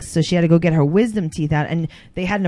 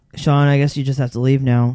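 put-on monotone voice, lower pitch; 4 semitones lower, 3 dB louder than usual. Imitating Jade telling Sean to leave: imitating Jade's monotone voice. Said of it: "she's very monotone".

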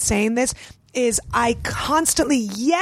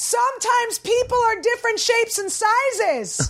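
put-on very high, shrill child's yell, words stretched; 10 semitones higher than usual. Retelling what her child yelled out across the park, imitating a child yelling. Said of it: "And he yells out".

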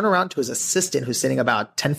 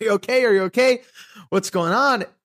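mock alarmed, worried, very high-pitched voice; 9 semitones higher, 3 dB louder than usual. Retelling how Stan ran over in front of an audience: imitating Stan's worried voice. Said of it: "thinking I'm having like a seizure".

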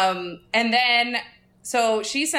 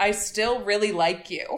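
usual speaking voice

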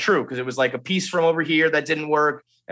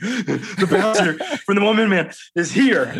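put-on breathless, out of breath, pitched-up voice; 5 semitones higher than usual. Retelling a coworker running in with news: imitating someone out of breath. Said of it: "He's out of breath".

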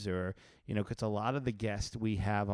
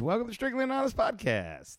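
bright, very high, swooping, upbeat sing-song; 13 semitones higher, 4 dB louder than usual. A co-host repeats the show's welcome, in a more upbeat way. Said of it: "In a more upbeat way".

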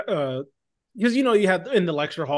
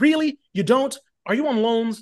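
acted-out patronising lecturer voice, condescending and pitched up; 6 semitones higher than usual. Retelling a professor's replies to a student: imitating a condescending professor. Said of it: "in the most condescending way".

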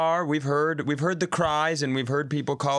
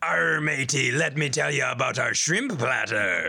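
put-on swashbuckling pirate voice. Joking about a restaurant with pirate decor: put-on pirate voice. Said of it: "about to sail the seven seas".

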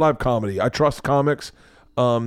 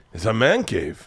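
clumsy, bad put-on Cuban accent; 3 semitones lower than usual. Retelling what a cigar roller from Cuba said: bad Cuban accent. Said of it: "I suck at accents".

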